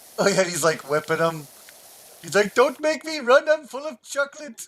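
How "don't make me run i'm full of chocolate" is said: failed, very high attempted German accent. Quoting a chocolate-loving kid from a hockey episode, attempted Simpsons kid accent. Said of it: "I can't do the accent".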